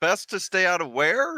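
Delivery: very high, loud called-out yell. Calling across a silent room to the barkeep: yelling out. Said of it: "I'm gonna yell out to him".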